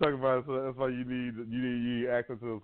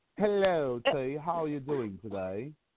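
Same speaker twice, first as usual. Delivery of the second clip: imitated British accent. In a back-to-back accent battle, trying a british accent. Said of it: "so they can see who got better British accent".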